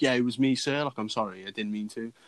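put-on cocky, boastful tone. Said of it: "like Billy Big Ballers looking at him".

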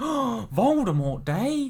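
put-on stunned crowd gasp, very high and loud. Retelling how a shocked theatre crowd reacted: imitating a shocked crowd.

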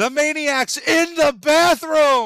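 loud, high, slow yelling.

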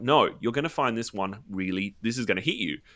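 normal talking voice

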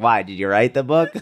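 mock sarcastic tone throughout. Retelling a nearby woman's question about writing the book: imitating a sarcastic tone. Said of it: "It was almost like a sarcastic".

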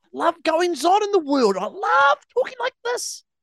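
very high-pitched, loud ranting voice. After saying you love his voice, imitate him getting into a rant: Joel impersonation, high-pitched rant. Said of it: "that was my impersonation of you".

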